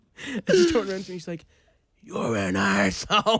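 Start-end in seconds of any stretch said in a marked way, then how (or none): 2.0-3.4 put-on slightly raspy girl's voice, flat and blunt. Retelling what a girl in a bar said: imitating a girl's raspy voice. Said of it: "She's just a bit raspy".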